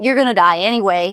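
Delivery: ordinary talk, nothing marked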